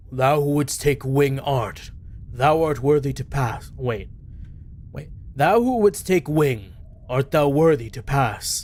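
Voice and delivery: put-on deep god-like voice. Voicing a figure that looks like an egyptian god, deep voice. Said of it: "everyone out here with a deep ass voice".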